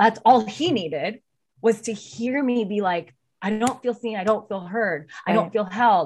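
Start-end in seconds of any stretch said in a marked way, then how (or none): 3.4-6.1 put-on tearful, crying, pleading voice, higher. Retelling own words said while breaking down in tears: imitating own crying plea. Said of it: "scream crying".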